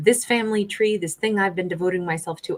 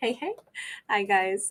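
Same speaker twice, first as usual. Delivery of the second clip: speech broken up by laughter; 7 dB quieter than usual. Greeting viewers after dropping a whole deck: laughing while talking. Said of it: "I'm laughing because I just literally lost".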